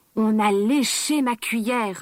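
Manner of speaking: slow, big, gruff growling bear voice. Reading a fairy tale aloud, voicing papa bear: big growling bear voice. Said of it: "a grogné papa ours avec sa grosse voix".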